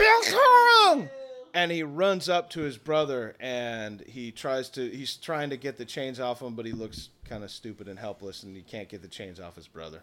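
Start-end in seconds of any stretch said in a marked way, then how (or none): 0.0-1.1 high, slow, loud joyful shout. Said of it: "He goes".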